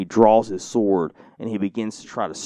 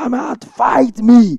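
shrill, very high, hyped-up, drawn-out screaming; 8 dB louder than usual. Retelling a film soldier yelling at paratroopers from a trench: imitating someone screaming. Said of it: "they can hear this German screaming".

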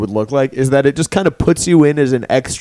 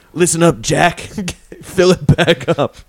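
very slow voice, every word drawn out; 3 semitones higher than usual. Acting out a guy at a bodega: Joe Biden impression. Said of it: "that's my Joe Biden impression".

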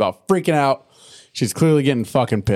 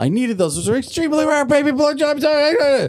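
put-on angry tone, higher. Retelling a cartoon scene where Rarity finds her gems gone: imitating someone furious. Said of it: "She's just, just pissed".

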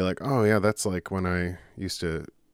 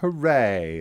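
put-on British accent, exclaiming; 2 semitones higher, 4 dB louder than usual. Doing an impression of the British ski guy, imitated British accent. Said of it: "I was trying to do my impression of the British ski guy".

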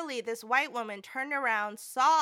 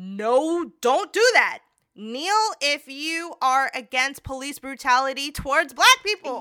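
loud yelled shout with long drawn-out "no"; 2 semitones higher, 8 dB louder than usual. Speaker retelling what they shouted back at the time, retelling their own shout. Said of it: "I shouted out back".

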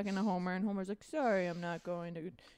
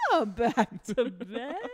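booming, drawn-out, slow and heavy voice; 3 semitones higher, 9 dB louder than usual. Retelling a cartoon scene, calling a praying wife back to bed: imitating Homer Simpson. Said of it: "He goes".

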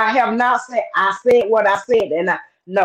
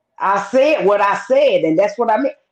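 normal talking voice

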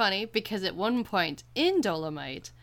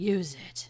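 put-on whispered voice. Retelling a film scene where Blade whispers to a grieving character: imitating a whispered line. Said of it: "and whispers".

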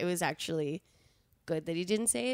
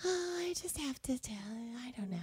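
high, teasing, coaxing put-on voice; 7 semitones higher, 7 dB quieter than usual. Retelling how she tricks partners into speaking first, imitating her own put-on coaxing voice. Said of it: "You do that voice?".

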